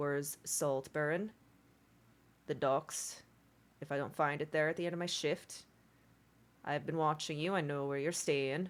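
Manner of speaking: voice brought down low and hushed. A dwarven guard, after a loud warning to foreigners, turns to them: lowered voice. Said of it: "he lowers his voice again and says".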